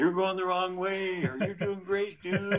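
put-on very high, sloppy, slurred drunken shouting. Runner retelling people from the bars yelling at him during a race, imitating drunk slurred yelling. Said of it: "yelling at you with very slurred language".

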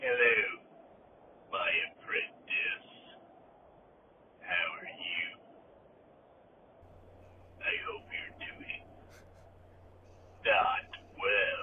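villain voice breathed in whisper. Opening the segment as the Emperor: Emperor voice. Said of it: "That's all I fucking know the Emperor does".

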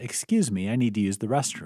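plain

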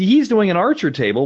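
excited, high-pitched voice.

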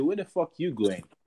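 normal talking voice

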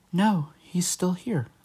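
put-on small child's voice, high, like a little kid. Retelling a voice heard late at night, in a little kid voice. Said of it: "It's a little kid voice that was like".

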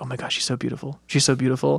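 soft, hushed whisper under the breath. Retelling what a friend kept saying during the movie: imitating Jessica whispering. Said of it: "Jessica kept whispering".

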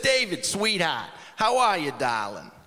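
put-on old Italian grandmother voice, elderly. A man retelling a phone call with his Nana, imitating his old Italian Nana. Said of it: "She's an old Italian Norma".

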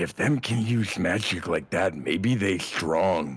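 hushed whisper. During a game, a player's character whispers to a companion, whispering. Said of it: "Hoster's gonna whisper to Morgrid".

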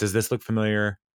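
ordinary delivery

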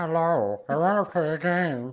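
put-on froggy puppet voice. Quoting a movie puppet's line, in a Kermit the Frog voice. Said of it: "fucking puppet voice is Kermit the Frog".

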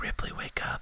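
put-on whisper. Retelling waking his daughter at nap time: retelling a whisper. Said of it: "I just whispered in her ear".

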